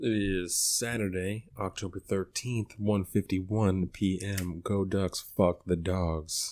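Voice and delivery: put-on sexy, sultry voice. Announcing the date and time to open the show: put-on sexy voice. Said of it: "In that sexy [name] voice".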